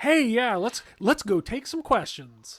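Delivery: high, swooping, bursting stage-host enthusiasm. Retelling Frank opening the panel to questions: imitating Frank, voice-actor enthusiastic. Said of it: "he is voice actor enthusiastic".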